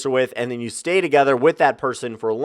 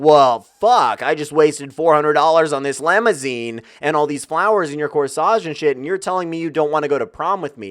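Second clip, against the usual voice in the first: ordinary talk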